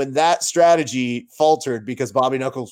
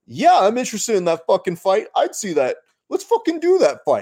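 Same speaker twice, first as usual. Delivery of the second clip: animated, pitched-up sing-song with wide high pitch swings; 7 semitones higher than usual.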